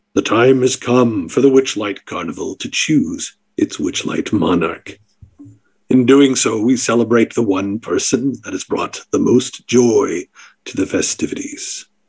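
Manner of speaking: deep, low voice. As game master, the speaker voices an unseen carnival announcer from the darkness, deep voice.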